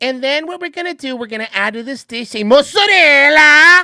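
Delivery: very loud, put-on Italian pronunciation. Mocking a TV cook's sudden Italian pronunciation: imitating Giada De Laurentiis's Italian pronunciation.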